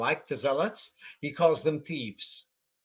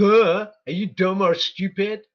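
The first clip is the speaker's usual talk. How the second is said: loud, slow, contemptuous, scornful jeer; 4 semitones higher, 9 dB louder than usual. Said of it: "I'm going to have to speak like this".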